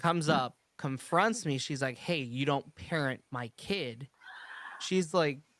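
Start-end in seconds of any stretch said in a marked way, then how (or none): none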